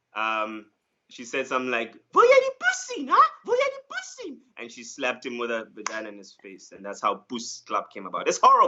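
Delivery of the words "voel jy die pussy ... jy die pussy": acted angry outburst, higher and louder. Retelling a stage bit where a girlfriend turns on him: imitating an angry woman. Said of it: "she got so angry".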